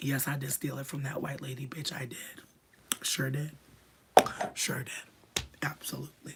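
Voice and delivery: soft, non-breathy whisper.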